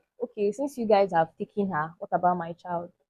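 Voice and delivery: ordinary talk, nothing marked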